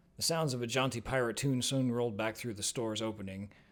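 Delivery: plain reading voice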